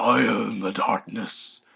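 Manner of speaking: slow, rough, gravelly growl from deep in the throat. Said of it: "gargling marbles in down in his throat".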